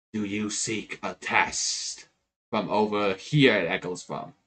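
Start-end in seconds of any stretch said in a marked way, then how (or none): 0.1-2.0 slow, hushed, echoing, disembodied whisper. Voicing an unseen presence in a dark passage: whispering voice. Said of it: "you do hear a whisper saying".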